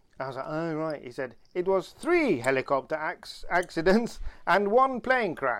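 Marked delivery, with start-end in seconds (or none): 1.6-5.6 high, loud put-on Italian accent. Quoting Nini's reply to a question, in Nini's Italian accent. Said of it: "in an Italian accent".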